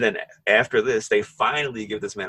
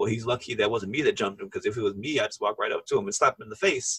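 normal talking voice

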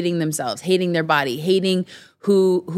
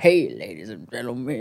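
put-on voice of an eighty-year-old smoker; 7 semitones lower, 4 dB quieter than usual. Imitating a friend on a podcast: imitating an old eighty-year-old smoker's voice. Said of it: "his voice is like of an old eighty-year-old smoker".

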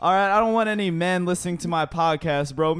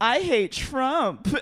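higher-pitched lilting put-on voice; 6 semitones higher than usual.

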